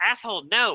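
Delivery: high, heated, angry outburst yell. Retelling yelling at the phone after a ruling: retelling own yell. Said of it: "yelled at my phone".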